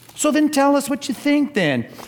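high, sly, baiting flatterer voice.

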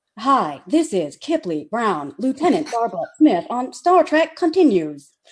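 robotic speech. Speaker demonstrates another way to do the show's intro, robot voice. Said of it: "A robot voice".

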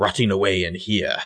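abrupt switch to a put-on British accent. Retelling a man's words as he suddenly switches voice: British accent. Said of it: "he suddenly switches to the British accent".

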